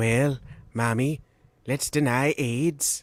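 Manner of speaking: slow, drawn-out impression, words stretched. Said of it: "That was my Ronnie, my Ronnie impression".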